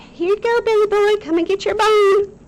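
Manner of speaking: loud, very high, poorly done Texas accent. Picturing Auntie Katrina in Dallas calling her dog: Auntie Katrina, bad Texas accent. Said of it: "That wasn't a very good Texas accent".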